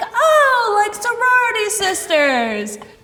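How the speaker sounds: high, loud, dim dopey guy voice.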